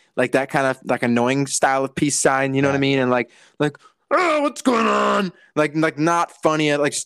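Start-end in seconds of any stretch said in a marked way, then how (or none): 4.1-5.4 put-on gravelly voice, much higher and slower. Describing a YouTuber's annoying style, imitating a gravelly voice. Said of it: "she always does that like grovelly voice".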